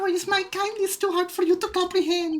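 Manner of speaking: put-on very high little German boy voice. Speaker offers to keep doing the voice, little German boy voice. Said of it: "You want me to do my little German boy voice?".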